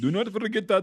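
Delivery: bad, high-pitched Indian accent.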